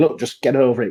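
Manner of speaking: ordinary talk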